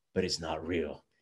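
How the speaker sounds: very low, soft, hushed voice. Retelling a scene where Batman answers the Mad Hatter; Batman voice. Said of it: "in his Batman voice".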